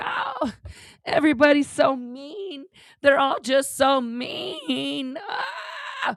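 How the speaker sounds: mock sarcastic put-upon complaining whine, high and slow. Mocking what someone says after propping someone up: mocking imitation of someone complaining. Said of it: "But you wanna go".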